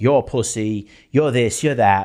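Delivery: put-on Italian accent. Imitating Andrew Tate insulting a lost man: Andrew Tate impression in Italian accent. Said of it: "Always in an Italian accent".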